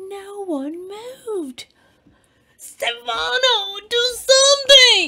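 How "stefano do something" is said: very loud, shrill, high-pitched shriek. Sea Cucumber calls on Stefano again as a diver runs out of air: shrieking. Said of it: "she shrieked again".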